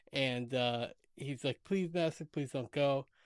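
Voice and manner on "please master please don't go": put-on pleading voice. Retelling a scene where a servant begs his master to stay: imitating Guillermo pleading. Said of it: "he pleads".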